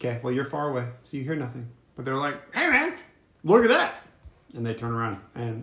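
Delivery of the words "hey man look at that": high, shrieking goblin voice. Voicing goblins who notice a player: shrieking goblins. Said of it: "kinda shrieking at you 'cause they notice you".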